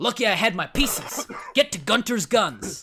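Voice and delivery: booming, high voice, slow and drawn out. Joking about a film's old man with guns: Danny DeVito impression. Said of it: "That's my Danny DeVito impression".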